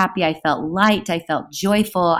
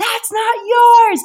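mock, loud, very high, full-out scream; 6 dB louder than usual. Recounting a purse theft, reenact screaming at the thief; retelling own scream. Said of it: "And I scream".

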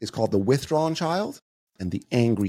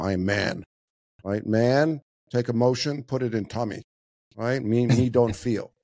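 put-on caricatured caveman tough-guy voice. Acting out how men bottle up emotions: mocking caveman macho voice. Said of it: "We call it compartmentalizing".

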